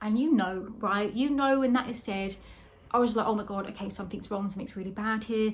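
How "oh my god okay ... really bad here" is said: ordinary talk, nothing marked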